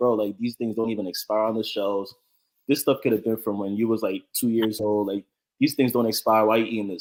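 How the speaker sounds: normal talking voice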